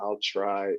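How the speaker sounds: slow, sore, beat-up sounding delivery. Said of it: "talking slow 'cause he's feeling everything".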